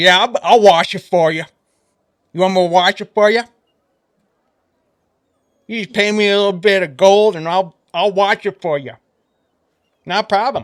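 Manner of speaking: toothless, gap-toothed man's voice. Voicing a shirtless man offering to wash it for gold: grinning toothless man character. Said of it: "He says".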